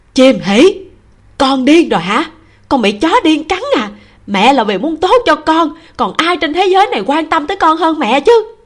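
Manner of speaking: shouting, yelling. A mother shouts back at her daughter, who refuses the match she chose, shouting. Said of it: "Trì Quý Lan cũng hét lên".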